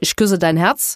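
warm Berlinerisch Berlin dialect. Saying goodbye at the end, now switching into Berlin dialect. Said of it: "aber jetzt auf Berlinerisch".

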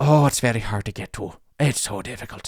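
put-on Irish-sounding accent. Retelling a man who explained how hard a place was to find, imitating a man's irish accent. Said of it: "but he sounded Irish".

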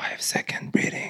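quiet, low-volume whisper. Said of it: "you're just whispering in your ear".

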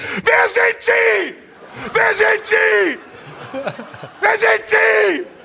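mock very high, demanding, drawn-out yell. Recounting a man with a flashlight yelling at the speaker, retelling a shout. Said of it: "schreit mich ein Typ an".

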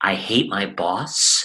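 very slow, hushed, under the breath. Retelling what a student said in a group, imitating someone saying it very quietly. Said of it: "looked around in the room and very quietly says".

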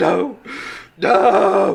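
high-pitched sobbing wail, crying out through sobs. A father grabs his son's body and cradles his head, screaming and crying. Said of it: "He's just screaming and crying".

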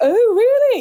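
put-on affected posh Southern English accent, very high-pitched. Retelling how people react on hearing of a classical music job: put-on posh voice. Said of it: "putting on a posh voice and they go".

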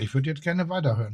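soft words through a full mouth, still chewing. In a group conversation, one speaker chimes in while talking with mouth full. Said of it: "Ich habe Mund voll".

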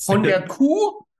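completely stunned, shocked disbelief, high-pitched. Retelling a café worker's reply to an order of cow's milk: imitating a completely shocked tone. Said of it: "Komplett schockiert".

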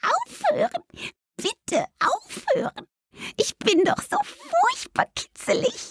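voice pitched very high, small and little. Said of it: "Da vernahmen sie eine hohe Stimme".

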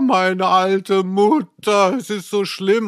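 put-on whiny crying. Retelling a man breaking down over his old mother, imitating whiny crying. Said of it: "dann kommt er so in ein Greinen".

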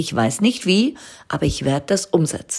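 plain

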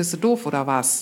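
pitch falls on "was" in "oder was". Rhetorical question example in intonation lesson, pitch falls on 'was'. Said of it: "Dann gehe ich halt trotzdem runter mit der Stimme".

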